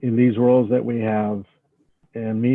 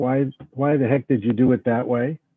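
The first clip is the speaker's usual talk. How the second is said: put-on stern, scolding tone. Thanking someone, acting out the scolding they could have given, mock-stern voice. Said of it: "in a very stern voice".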